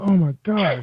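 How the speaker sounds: mock overjoyed, excited, high-pitched happy exclamation. Recalling an inbox message saying a guest wanted to come on the show, retelling happy excitement. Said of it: "I was so happy".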